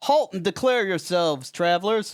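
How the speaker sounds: man calling out loudly from afar, high. A man at the village gates calls out to approaching travelers, calling out. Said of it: "a man call out".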